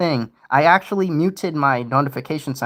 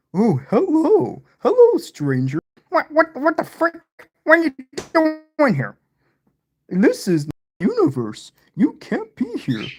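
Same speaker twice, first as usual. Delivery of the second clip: very high talking-dog voice, swooping all over; 11 semitones higher than usual. In a solo roleplay, the dog greets an intruder, in a Clifford voice. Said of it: "Roleplay Clifford stepping on Peter".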